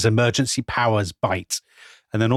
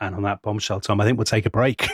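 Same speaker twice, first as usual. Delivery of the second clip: ordinary talk, nothing marked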